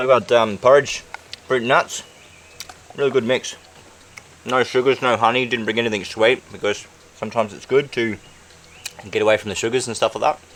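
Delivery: speaking while chewing, mouth full of food. Talking to the camera while eating porridge, with a full mouth. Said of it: "So I'm talking with a full mouth".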